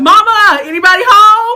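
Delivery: very loud, shrill, high-pitched scream. Retelling calling out through an empty house: imitating own past screaming. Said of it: "and I'm screaming".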